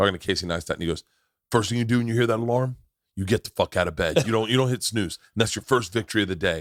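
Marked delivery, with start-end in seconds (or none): 1.5-6.6 intense, forceful, emphatic, motivational-sounding delivery. Imitating a tough-talking video about getting out of bed: Jocko Willink impression. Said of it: "I'm doing a Jocko impression".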